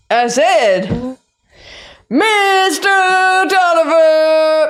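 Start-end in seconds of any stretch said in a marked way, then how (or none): 2.1-4.7 high sports-fan shout, stretched out. Trying to rouse the unconscious Mister Tolliver, Rollo repeats his name in a sports-crowd shout. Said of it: "I said that like we were at a sporting event".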